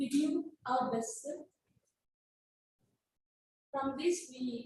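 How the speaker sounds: shaky, trembling, wavering voice. A student finishes presenting to the class after being asked to speak louder: shaky voice. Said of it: "your voice is shaky".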